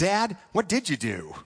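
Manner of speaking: worried, earnest, really concerned tone. Telling a story, quoting a son asking his father a question: retelling a concerned question. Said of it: "asked in a really concerned voice".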